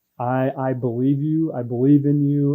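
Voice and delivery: imitated tearful voice. Retelling what her mom said on the phone, imitating her mom crying. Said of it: "And she starts crying".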